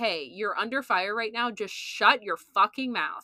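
usual speaking voice

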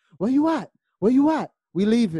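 very high, very loud hollering yell. Speaker retells a woman going through the house calling for Shorty: imitating someone yelling. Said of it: "yelling for Shorty".

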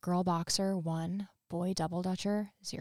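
put-on hushed whisper. Retelling what a character whispered to the boy she beat: retelling a whisper. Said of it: "leans down and whispers to him".

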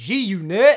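put-on yell. Retelling seeing a celebrity at a red light: retelling a yell. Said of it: "And I yelled out".

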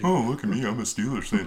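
taunting, mocking, ridiculing tone. Teasing someone in the crowd, the speaker mocks a Steelers fan. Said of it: "I'm mocking him".

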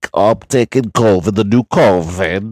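covid dragged out, done badly. Imitating Doctor Fauci urging people to wear masks: horrible Fauci impression. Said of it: "it's a horrible Fauci impression".

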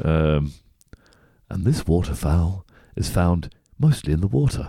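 wildlife film voiceover, nature documentary narrator style. Asked to have a go at voiceover, in a nature documentary narrator voice. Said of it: "Do you have a go?".

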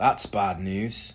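muttered sarcastically. Logan watches their only exit disappear under the mountain; sarcastic mutter. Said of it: "Logan muttered, sarcasm lacing his voice".

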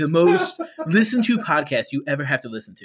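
politician-style voice with wildly swooping pitch. Asked to do the voice, describing the podcast: Donald Trump impression. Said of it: "Can you do that Donald Trump voice?".

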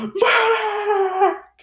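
very high, desperate, drawn-out shout. Retelling how a soldier screamed for help after a barrage: imitating a desperate shout. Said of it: "really shouts, like".

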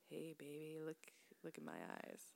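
very soft, hushed, slow, drawn-out seductive vampire voice. Describing a type of vampire by acting one out: put-on slow seductive vampire voice. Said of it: "slow, sort of seductive type of vampire".

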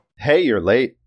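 playful, teasing tone. Greeting a husband as he comes home late at night, teasing. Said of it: "Liv teased your husband".

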